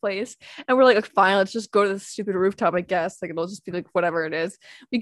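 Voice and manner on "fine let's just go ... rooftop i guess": normal talking voice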